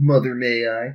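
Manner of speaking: snide, mocking, sarcastic sneering tone. Voicing Blade answering his new living arrangement: sarcastic.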